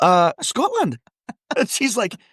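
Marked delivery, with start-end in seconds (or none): 0.0-1.0 put-on Scottish accent with higher pitch. Retelling meeting a friend's mother while pretending to be scottish: put-on scottish accent. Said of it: "into thinking I was Scottish".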